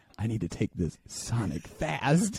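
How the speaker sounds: speaking in a low voice, out loud. Retelling what they said out loud to themselves, in a low voice. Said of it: "like in a low voice".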